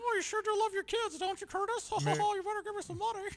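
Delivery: very high, squeaky cartoon critter voice. Doing a Mickey Mouse impression at Curtis: squeaky Mickey Mouse voice. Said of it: "That was my Mickey Mouse impression".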